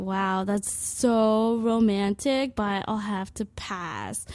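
slow, sarcastic delivery. Retelling her reply when a man at a music festival asked to make out, retelling a sarcastic reply.

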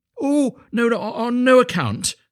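drawn-out, very high, loud crying out. Answering the miller's request, refusing to let him go himself: crying out. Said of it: "cried Little Hans".

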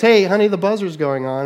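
loud calling out, acted. The speaker shows calling up the stairs to Andrea, reenacting shouting up the stairs. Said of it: "I'll shout up the stairs".

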